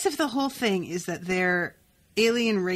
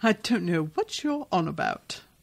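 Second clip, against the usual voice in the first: put-on British accent. Acting out how he answers people who ask about his accent, in a fake British accent. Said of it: "where'd this accent come from?".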